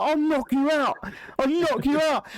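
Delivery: imitated shouting. Retelling how a stranger shouted in the speaker's face: imitating someone shouting. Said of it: "he's shouting in my face".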